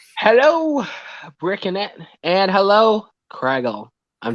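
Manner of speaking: gloomy, downcast, mopey, depressed tone. Greeting two fellow streamers, sounding depressed. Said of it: "you sound so depressed?".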